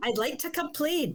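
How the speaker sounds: put-on, high-pitched Scottish accent. Podcast hosts recalling a caller complaining to Channel nine, Scottish accent impression. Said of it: "he had a Scottish accent or something".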